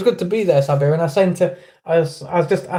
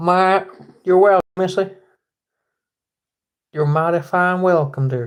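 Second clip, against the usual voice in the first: tried-on Southern US accent. Answering a thank-you during the sign-off, attempted Southern accent. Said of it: "I'm trying to do my accent".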